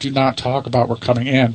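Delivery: ordinary talk, nothing marked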